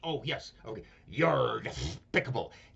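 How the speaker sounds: half-hearted, weak cartoon duck voice. Running through a series of cartoon impressions, doing a Daffy Duck voice. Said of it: "Daffy Duck".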